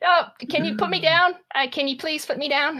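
put-on high-pitched, squirming child's voice.

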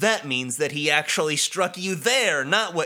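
normal talking voice

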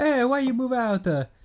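very high, put-on Italian accent. Retelling what the parents say as the son moves out: mock italian accent. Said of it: "are we all Italian here?".

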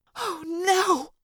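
high half-whisper in utter horror. Reading a story aloud, voicing Cassie staring at the narrator's back: horrified half-whisper. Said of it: "Cassie whispered in utter horror".

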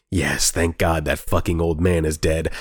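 put-on whisper. Retelling a scene where Dorothy turns from people: imitating Dorothy whispering. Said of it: "whispering to herself".

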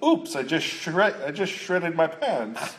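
bad put-on English accent.

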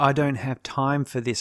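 ordinary talk

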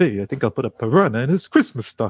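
put-on vintage, old-school nightclub standup comedian delivery. Imagining how Garfield might have sounded back in 1978, speak in a Rodney Dangerfield voice. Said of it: "Maybe he did sound like a Rodney Dangerfield".

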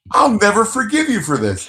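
put-on very high-pitched, swooping, furious yell. Retelling a story, the speaker acts out a woman yelling at a man: imitating someone yelling. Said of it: "she starts yelling at him".

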